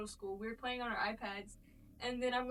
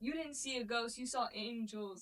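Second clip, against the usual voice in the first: ordinary delivery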